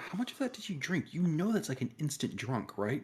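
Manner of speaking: hushed, quiet half-whisper. Asking another character in the scene how much was drunk: half-whispering. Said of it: "I'm gonna whisper it kinda".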